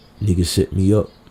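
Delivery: low, hushed, insistent muttered aside. Retelling what Pop said after being shot, imitating Pop's low voice. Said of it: "A low voice".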